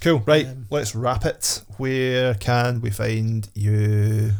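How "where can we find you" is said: very slow robotic voice, you stretched out. Wrapping up and asking the guest a closing question, in a robot voice. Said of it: "I said that like a robot".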